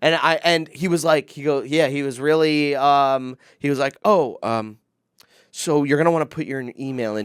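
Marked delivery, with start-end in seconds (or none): 4.0-7.3 play-acted, suddenly sweet, incredibly nice, eager tone. Retelling how a man answered after hearing about cancer: imitating someone suddenly very nice. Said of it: "He immediately became incredibly nice".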